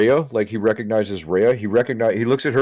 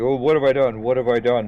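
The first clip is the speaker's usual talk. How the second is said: weeping, broken-down, sobbing, crying through the words; 2 semitones higher than usual. Narrating a scene, voicing a man after he puts something in his mouth, sobbing. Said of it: "he begins sobbing".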